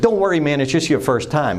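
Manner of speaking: ordinary talk, nothing marked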